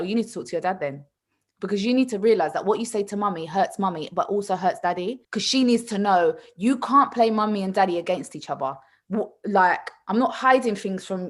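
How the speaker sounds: usual speaking voice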